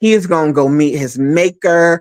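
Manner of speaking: ordinary talk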